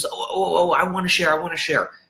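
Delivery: high, overeager blurted voice, bursting with eagerness. Describing a group's sharing time, mimicking the one person always keen: imitating an overeager person. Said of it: "there's always going to be that one person".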